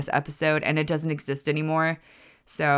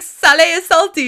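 very high, loud, excited voice. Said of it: "And it's like".

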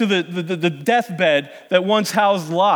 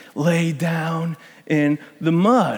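put-on whisper, stronger and louder; 2 semitones lower than usual. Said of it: "that whisper increase".

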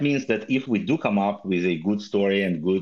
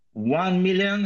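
very high, shrill, campy, hammed-up villain voice; 10 semitones higher than usual. Announcing a foundation's holdings on a podcast, doing a Dr. Evil impression. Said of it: "I'm doing my best Dr. Evil impression".

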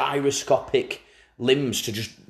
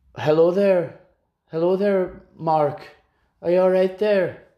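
put-on Scottish accent, raised pitch; 5 semitones higher, 3 dB louder than usual. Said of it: "he's not Scottish, he's Welsh".

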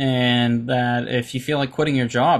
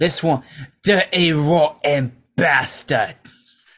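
announced in a British accent; 3 semitones higher than usual. Introducing the next one to play, in a British accent. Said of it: "I'll say this in a British accent".

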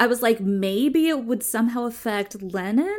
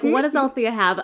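ordinary delivery

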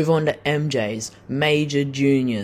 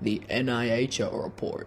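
soft, bad put-on announcer-style voice; 3 semitones lower, 10 dB quieter than usual. Podcast host introducing the NIHL report segment: terrible put-on voice. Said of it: "That was a terrible voice".

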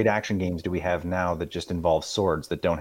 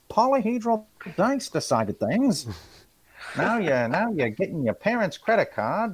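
put-on Chicago wise-guy gangster voice, much higher; 12 semitones higher than usual. During a tabletop game, the speaker slips into a Chicago gangster wise-guy voice. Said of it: "I'm turning into a wise guy here".

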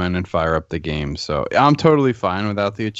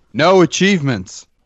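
full-volume, high-pitched, full-throated scream; 8 semitones higher, 3 dB louder than usual. Prompted by a co-host to say it first, screaming. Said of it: "So he woke up his kid anyway".

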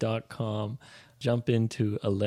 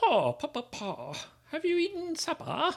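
put-on high, old-fashioned homey voice. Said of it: "supper sounds kind of like".

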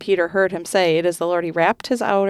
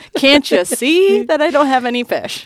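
put-on pointed, mocking sarcasm, raised and swooping; 8 semitones higher, 6 dB louder than usual. Acting out an imagined sarcastic reply to Jesus's question: put-on sarcastic tone.

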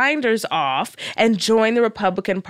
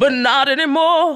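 put-on preacher voice, delivered like a sermon; 4 semitones higher, 4 dB louder than usual. Reading a tweet aloud in a Martin Luther King voice. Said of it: "Let me put on my Martin Luther King voice".

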